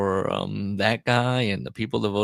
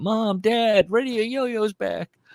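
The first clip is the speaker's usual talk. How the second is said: put-on voice calling out, pitched higher; 13 semitones higher than usual. Picturing a yo-yo fan calling up from the basement: imitating a yo-yo fan calling upstairs. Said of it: "He's calling up, uh, from the basement".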